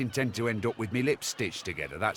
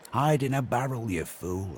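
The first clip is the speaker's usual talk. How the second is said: plain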